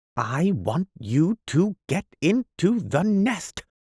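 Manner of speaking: very slow, very high, drawn-out, distinct enunciation. Narrator reads the bird calling to Peter, speaking very slowly and distinctly. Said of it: "speaking as slowly and distinctly as possible".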